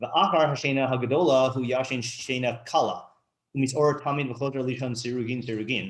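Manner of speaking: ordinary talk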